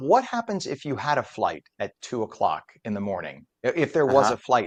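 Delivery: ordinary delivery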